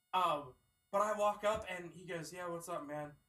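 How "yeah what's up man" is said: put-on bored, indifferent teenage clerk voice. Retelling how a teenage store employee greeted him, imitating an indifferent teen clerk. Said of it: "that's how he sounded".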